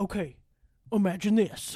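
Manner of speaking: dad voice in a storytelling manner. Retelling how your dad told you about these books, imitating your dad. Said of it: "And my dad does talk like this".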